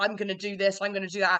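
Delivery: plain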